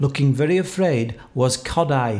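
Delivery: ordinary delivery, nothing marked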